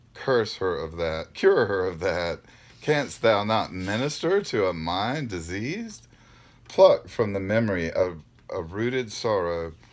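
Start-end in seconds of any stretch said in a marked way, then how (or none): none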